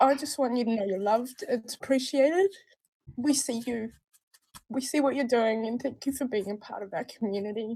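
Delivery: crying, tearful voice. Live, thanking a member of the community, crying. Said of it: "I can't believe I'm crying live".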